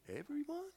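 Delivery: everyone lifted with a rising, question-like tune. Playfully echoing someone's answer said like a question: question-like rise on 'everyone'. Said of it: "You said it like a question".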